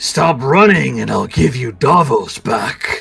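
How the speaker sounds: sudden voice speaking close, right at the ear. Voicing an unseen voice calling loudly to a running character: loud voice in the ear. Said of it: "a voice that, that is loud in your left ear".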